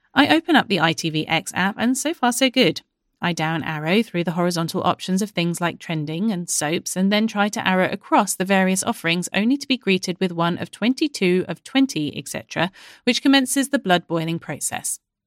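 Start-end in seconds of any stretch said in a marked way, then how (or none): none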